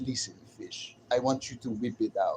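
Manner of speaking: put-on Russian-accented English in a Russian woman's manner. Imitating how Russian women talk, mock Russian accent. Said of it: "the way they talk like this".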